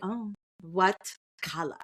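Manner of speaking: clumsy, terrible, fake Russian accent. Retelling a scene between two characters, voicing Ilya in a bad Russian accent. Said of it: "that was a terrible accent".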